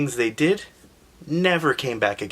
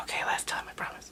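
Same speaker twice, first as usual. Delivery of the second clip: whispered, very soft and hushed. Retelling a story, voicing a sleeping princess: acting out a whisper. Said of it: "So she stops whispering".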